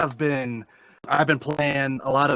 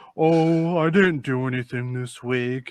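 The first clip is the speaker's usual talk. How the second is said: put-on droopy, mopey voice. Complaining about a friend, imitating him in a droopy, mopey voice. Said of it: "he's just like like fucking droopy".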